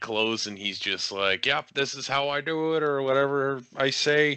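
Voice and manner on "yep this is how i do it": put-on Minnesota accent with easy, relaxed delivery. Retelling what the Undertaker said, imitating Undertaker with Minnesota accent. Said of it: "why does Undertaker sound like he's from Minnesota".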